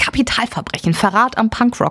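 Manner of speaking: ordinary talk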